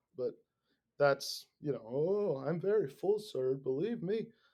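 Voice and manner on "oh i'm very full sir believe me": slow, badly done put-on Korean accent. Imitating a lady on a subway in north korea: bad put-on korean accent. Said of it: "that is not a Korean accent at all either".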